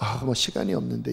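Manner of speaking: put-on aloof, haughty manner. A preacher acts out someone praying without sincerity, mock-haughty. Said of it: "도도하게".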